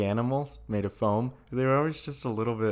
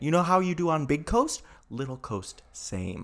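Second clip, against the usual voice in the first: over-explaining, pitched-up, pedantic know-it-all lecturing; 5 semitones higher than usual. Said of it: "Just speak so pedantic to us".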